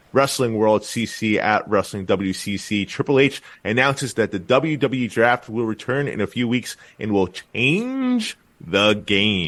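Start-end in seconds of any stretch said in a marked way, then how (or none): 6.5-9.5 change the game heavily stressed, stretched out slow. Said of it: "Lots of emphasis on that".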